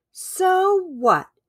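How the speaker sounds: irritated, annoyed, very high retorting tone. The other crocodiles respond to Cornelius, annoyed.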